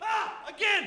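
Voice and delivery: very high, play-acted screaming cry. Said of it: "More screams".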